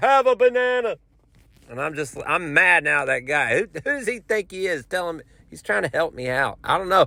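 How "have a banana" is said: play-acted pushy, high-pitched shouting. Retelling a man pushing a banana on him, imitating a man yelling. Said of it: "he starts yelling at it".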